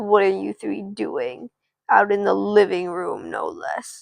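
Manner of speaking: annoyed, irritated, pissed-off dad voice. Telling a story, quoting what her dad said to them, imitating an annoyed, pissed-off voice. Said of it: "he's got this kind of like annoyed, pissed off voice".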